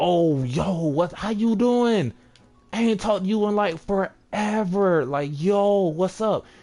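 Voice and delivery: high, drawn-out, overly friendly, dripping sarcasm. Showing how a sarcastic greeting to an ex who cheated sounds: overly dramatic sarcastic greeting. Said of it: "I'm being very sarcastic right now".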